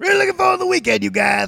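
very high-pitched, loud, rough cartoon voice. Showing first how he'll say the weekend line, in a Cartman voice. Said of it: "Here's how I'll do it first. ... it's Cartman / Dusty Rhodes, but it's also what I think Carl sounds like".

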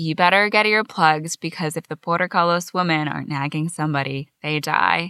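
plain

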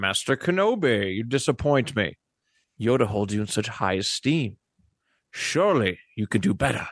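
aristocratic villain character voice. Doing an impression contest line, Count Dooku impression with Sean Connery. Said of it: "I heard a little Sean Connery in there".

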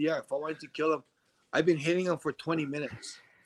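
ordinary delivery

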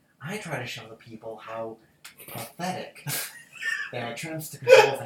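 breathy, whispered villain voice. A chef explaining his philosophy slips into a Joker voice. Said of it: "did you just go into your Joker voice? Yes, I did".

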